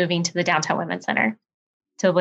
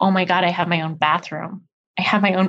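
put-on tearful crying woman voice. Retelling what a crying woman said on moving in: imitating a woman crying. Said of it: "this one woman just couldn't stop crying".

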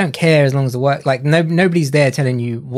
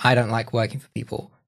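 normal talking voice

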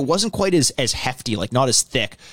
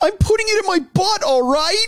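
mock sorrowful and sincere, very high, sad tone. Retelling Steve-O turning to the camera: imitating a sad Steve-O. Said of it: "he's so sad and he's like".

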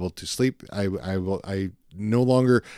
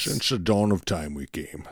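quieter, put-on Scottish accent; 3 dB quieter than usual. Comparing the Bane and Sean Connery impressions, then doing a Sean Connery impression. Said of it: "take the accent, off".

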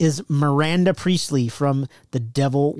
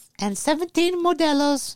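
high-pitched Mexican-flavored voice; 12 semitones higher than usual. Pretending to order at a drive-thru: Mexi Elmo voice. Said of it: "in Mexi Elmo style".

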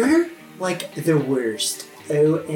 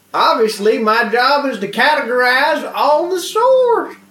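toothless yokel character voice; 10 semitones higher, 8 dB louder than usual. Voicing a toothless redneck yokel found in a storage room: toothless yokel voice. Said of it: "He's like".

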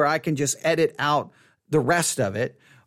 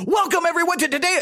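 exaggerated mock overexcited host voice, much higher; 2 semitones lower, 3 dB quieter than usual. Joking about how their own radio-host voice would sound, the speaker acts out a greeting to an audience, in a mock overexcited host voice. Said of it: "I don't know if my voice does the NPR thing".

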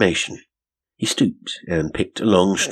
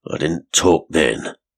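growled, growling voice; 3 dB louder than usual. Narrating Benson answering an accusing question, read his reply growled. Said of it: "he growled".

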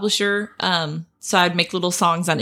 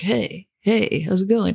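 cool, casual, laid-back tone. Telling how Burt greeted you after you gave him a painting, do Burt's cool voice. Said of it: "he still has that cool voice".

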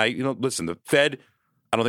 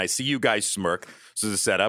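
normal talking voice

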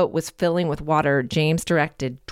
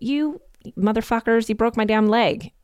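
put-on high-pitched screamed outburst; 7 semitones higher than usual. Retelling a man's cries after being shot in the leg: imitating someone screaming. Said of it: "now he was screaming".

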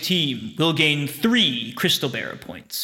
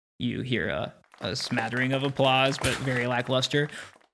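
ordinary talk

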